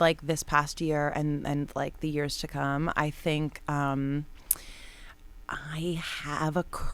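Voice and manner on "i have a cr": slow, hushed, dropped whisper. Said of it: "I love how you're whispering".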